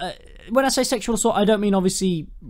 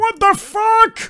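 outraged, high, slow, drawn-out squeal. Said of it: "And she's like".

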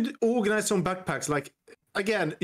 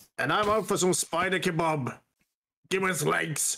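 put-on growly monster voice; 3 semitones lower than usual. Talking while playing a game with others, in a Cookie Monster voice. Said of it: "You sounded like Cookie Monster there".

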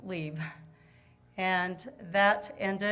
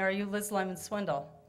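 whispering. Retelling how a woman at the gallery leaned over: retelling a whisper. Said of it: "leaned over and whispered to me".

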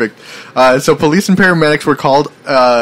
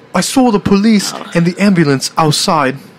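amateur attempt at British accent, slow and high; 5 semitones higher than usual. Trying to say a line in an attempted british accent. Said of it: "Alright, I'm going to try to do it".

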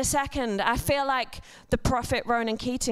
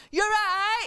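mock very high, carrying, high-pitched shout; 10 semitones higher than usual. Retelling what Grace shouts from across the road, retelling a shout. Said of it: "she shouts".

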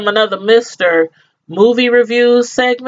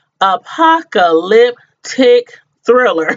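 much slower delivery. Reviewing a new Netflix movie, careful with a hard word: saying it slowly. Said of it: "I gotta say this slow".

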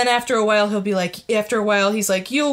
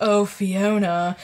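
seductive, sexy put-on British accent. Describing a voice that taunts you in a locked room; sexy british voice. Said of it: "this really sexy British voice is just like".

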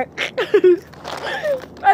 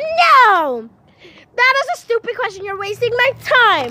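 put-on high yelling, the "no" drawn out long; 6 semitones higher, 3 dB louder than usual. Speaker quotes a woman who answered them, retelling her yell. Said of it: "but she yelled".

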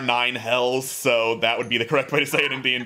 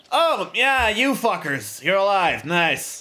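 pitched-up shopkeeper voice, welcoming tone; 7 semitones higher than usual. Voicing a shopkeeper who smirks at the party: smirking shopkeeper voice. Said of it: "smirks a bit as you call him boss, and is like".

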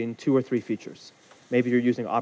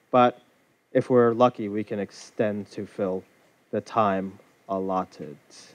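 very slow, halting, breaking mid-phrase; 3 semitones lower than usual. A speaker stretching out an intro to fill the allotted time, speaking very slowly. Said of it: "That's me speaking very slowly".

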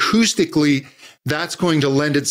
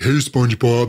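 dopey cartoon voice; 4 semitones lower than usual. Vocal coach showing how to relax a tight voice, dopey Patrick voice. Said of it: "they get a little bit of that dopey".

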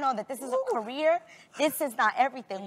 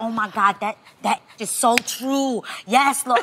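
slow, drawn-out, hushed half-whisper under the breath; 3 semitones lower, 7 dB louder than usual. Retelling a moment in church, imitating own half-whisper. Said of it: "I just whispered".

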